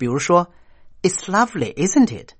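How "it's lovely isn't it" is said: pitch falls at the end of isn't it. Explaining sentence-end intonation with an example, falling tone on isn't it. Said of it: "如果句尾用降调，通常表示说话人的意思比较肯定".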